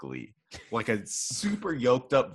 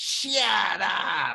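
silly, high, scratchy, rough-edged put-on comedian voice; 9 semitones higher than usual. Describing a movie's jokes, imitating Adam Sandler. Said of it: "Adam Sandler going".

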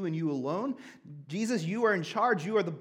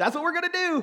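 mock pumped, excited tone, higher; 10 semitones higher, 4 dB louder than usual. Retelling own past words as a kid about playing video games: imitating own excited younger self. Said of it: "I got so pumped and so excited".

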